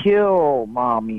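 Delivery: evil little wicked doll voice. Retelling what a talking doll said, in an evil little wicked voice. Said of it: "in an evil little wicked voice".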